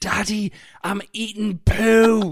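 play-acted little kid's high, full-voice yell, poo drawn out. A father retells what his son shouted in a crowded aisle: retelling a shout at full voice. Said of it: "he just shouted at the top of his voice".

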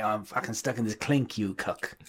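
put-on strong London accent. Doing a quick impression after calling the accent pure London: Karl Urban impression. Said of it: "It's pure London, innit? It's like".

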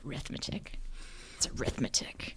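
mock hushed whisper, full of scorn. Retelling the dad's remark about arithmetic: imitating dad's scornful tone. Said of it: "the scorn in his voice when he said arithmetic".

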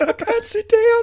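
squeaky, very high-pitched little voice. Acting out a marcher who refuses a wheelchair: high-pitched voice. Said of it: "With that high-pitched voice as well".

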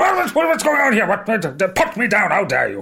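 very high, outraged, flustered lizard creature voice.

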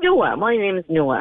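said very proudly, acted out. Retelling a son's answer to a cashier, imitating Noah saying it proudly. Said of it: "he's very proudly".

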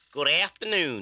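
put-on southern US accent. Greeting listeners when introduced on the panel: put-on southern US accent. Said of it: "That's a southern U S voice".

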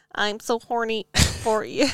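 put-on mechanical robot chatbot voice. Answering the suggestion to talk in a robot voice, in a robot voice. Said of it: "My robot voice?".

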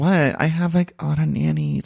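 put-on creaky coy baby voice. Imitating a housewife from season one: Camille Grammer's coquettish baby voice. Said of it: "talk in this weird, like, coquettish baby voice".

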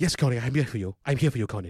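put-on German accent throughout. Imitating how a guy would always talk to someone, German accent impression. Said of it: "Like that's how he would always talk to him".

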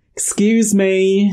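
overly polite British manner. Retelling characters trying to get a woman's attention: imitating a very british politeness. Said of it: "in the most British way as well".

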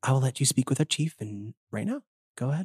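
sultry, sensual character voice. Voicing the character offering to let the players speak with the chief: sensual Miss Bellum voice. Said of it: "I'm getting into character here".

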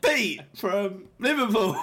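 put-on phony, invented-sounding phrasing. Teasing the other speaker by repeating how they said the name: imitating a made-up-sounding delivery. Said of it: "The way you said it, it literally sounded like you made this up".

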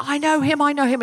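insistent high-pitched screaming, repeated. Retelling a man at a party door trying to get in, imitating someone screaming. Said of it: "he was screaming, he was standing at the door going".

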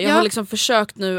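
plain

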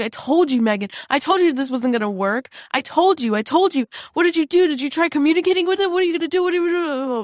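put-on high, choked-up voice, close to tears, pleading. Retelling a man crying and blaming the speaker, imitating someone choked up. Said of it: "really, like, choked up about it".

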